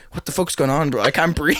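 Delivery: imitated angry, pissed-off man's voice. Retelling how a seatmate on a flight got pissed off: imitating a pissed-off man. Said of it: "He starts getting pissed off".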